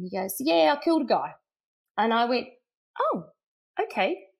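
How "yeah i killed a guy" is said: put-on breezy, offhand, nonchalant, matter-of-fact, pitched up. Retelling a man's answer when asked what he's doing there, nonchalant reply. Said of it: "I love how he just said it so nonchalantly".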